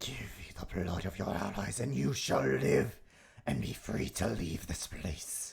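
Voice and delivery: hellish, demon-like voice. Narrating to a player the voice they hear, in a demonic voice. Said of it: "You hear this demonic sounding voice".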